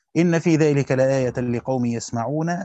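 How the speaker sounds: ordinary talk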